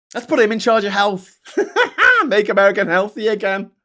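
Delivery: high, loud, laughing, scornful disbelief.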